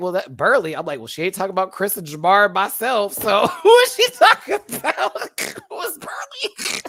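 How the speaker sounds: laughing while talking. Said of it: "I was like".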